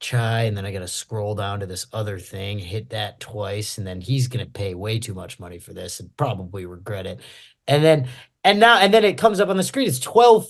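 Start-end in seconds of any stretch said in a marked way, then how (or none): 0.0-7.2 deep, low mumble, half under the breath. Retelling a barista muttering the order: imitating her muttering under breath. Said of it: "saying it under her breath".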